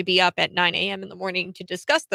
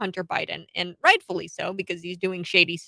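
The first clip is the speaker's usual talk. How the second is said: plain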